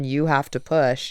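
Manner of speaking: mock-stern, firm, put-on commanding tone. Recounting what the group told her, imitating a stern command. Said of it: "such a stern".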